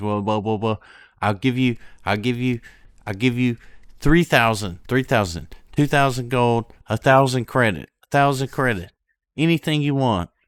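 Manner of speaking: fast, high, loud stammer, tripping over repeats. Game master voicing Crink to the players, stammering. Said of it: "he kind of stammers and he says".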